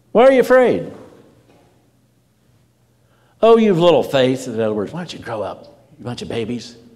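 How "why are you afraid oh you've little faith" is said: very high-pitched, loud scolding tone. Asking listeners to imagine the tone of the words, demonstrating a rebuking tone. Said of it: "Kind of a rebuking tone".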